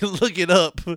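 put-on mimicking voice. Teasing the other speaker about how they said a line: imitating the other speaker's delivery.

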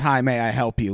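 acted, demanding, pushy, aggressive delivery. Retelling how staff greeted every customer at a barbecue place: imitating an aggressive greeting. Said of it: "it is a very aggressive".

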